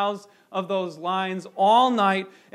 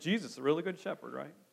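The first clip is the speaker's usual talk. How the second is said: very quiet, mocking, sarcastic tone; 4 semitones lower, 13 dB quieter than usual. Showing how a statement can sound, sarcastic. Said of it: "It even sounds a little bit sarcastic".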